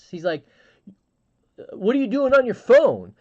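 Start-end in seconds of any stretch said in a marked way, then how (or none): 1.7-3.0 put-on very high, shrill, loud freaked-out yelling. Retelling how a man yelled at them in front of the class, retelling a yell. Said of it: "He like yelled at me in front of the class".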